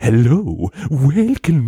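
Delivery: overdone, hammy, over-the-top theatrical delivery. Retelling how an actor playing a monk sounded: imitating an over-the-top monk. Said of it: "he's like, so over the top".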